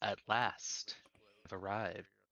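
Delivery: put-on dry, crackling, level old crone voice. A hunched crone at a crystal ball speaks as visitors enter her tent, in a crackling crone voice. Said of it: "Her voice crackles like dry weeds".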